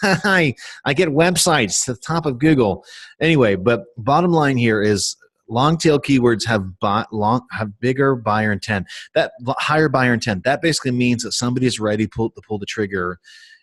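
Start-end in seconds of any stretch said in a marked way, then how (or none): 0.0-2.8 nerdy, dorky, geeky voice, high and slow. Imagining how a guy who does his kind of work should sound, geeky voice. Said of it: "a geeky voice".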